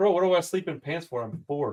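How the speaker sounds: normal talking voice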